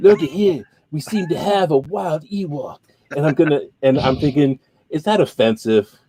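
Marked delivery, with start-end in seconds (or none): 0.0-2.8 put-on Australian accent. Attempting an accent, doing a Crocodile Hunter impression. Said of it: "I was going to try to do the accent".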